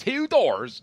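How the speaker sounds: doors in very high, loud Baltimore accent. Showing how people in Baltimore say a phrase: Baltimore accent. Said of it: "which is how the people say it in Baltimore".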